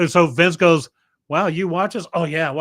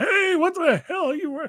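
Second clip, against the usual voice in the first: put-on high-pitched voice of an old codger; 13 semitones higher than usual. Offering a voice instead of a foreign accent: old man voice. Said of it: "but I can do some old man".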